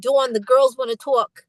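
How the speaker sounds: put-on very strong Boston accent, laid on thick. Retelling a manager's words in [name]'s Boston accent. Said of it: "it's very Boston".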